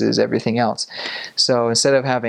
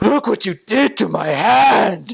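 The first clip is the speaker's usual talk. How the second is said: very high, pained, hurting complaining cry; 10 semitones higher, 4 dB louder than usual. Retelling the hurt man's complaint: imitating a man in pain. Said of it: "still, like, writhing in pain".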